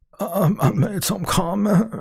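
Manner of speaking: very high, fake teary quaver, about to cry. Mocking a man's apology, the speaker repeats his words imitating someone about to cry. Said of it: "Why is he acting like he's going to cry?".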